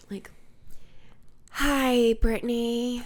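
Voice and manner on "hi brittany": put-on breathy voice, louder. Imitating a doctor's office calling with results: Jennifer Coolidge impression. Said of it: "what if it was, like, Jennifer Coolidge?".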